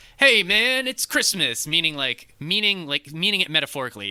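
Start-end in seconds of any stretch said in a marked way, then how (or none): 0.2-1.7 put-on very high-pitched, loud kid's yell. Retelling a movie scene where a kid is caught stealing: imitating a kid shouting. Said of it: "the kid just shouts at him".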